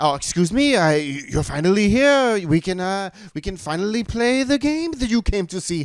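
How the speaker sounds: fake French accent, pitched very high. Retelling what a dressed-up man said to them, in a faux French accent. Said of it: "he was speaking in a faux French accent".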